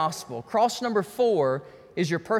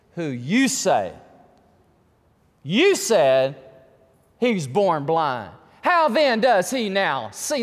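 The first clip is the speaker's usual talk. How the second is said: sarcastic, disbelieving, slow and swooping; 4 dB louder than usual. Reading the Pharisees questioning the parents aloud: acting out a sarcastic question. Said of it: "Now watch the sarcasm".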